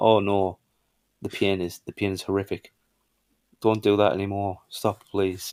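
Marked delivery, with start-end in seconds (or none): none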